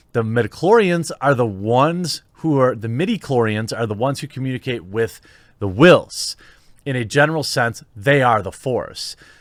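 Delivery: plain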